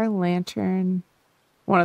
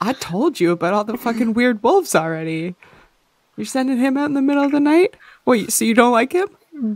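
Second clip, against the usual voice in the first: shouting out loudly; 4 semitones higher, 7 dB louder than usual. In a role-play game, a character confronts others about sending someone out at night; yelling. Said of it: "Did my yelling wake up Wyatt?".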